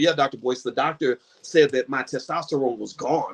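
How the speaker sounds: ordinary delivery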